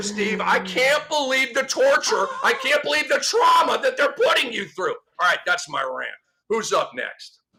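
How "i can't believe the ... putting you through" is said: put-on weepy, tearful sympathy, pitched higher. Mocking a coach's complaint about a tough schedule: mock tearful sympathy. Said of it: "I'm tearing up over here".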